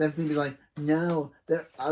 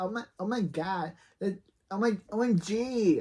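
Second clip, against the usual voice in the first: put-on slow-paced teenage girl character voice; 4 semitones higher than usual. Voicing a character in a teenager episode, teenage girl voice. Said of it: "A teenager's girl voice".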